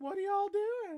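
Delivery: terrible, squeaky, very high cartoon voice. Joking about a quiz answer of Winnie the Pooh: bad Winnie the Pooh voice. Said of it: "that's not a good Winnie the Pooh".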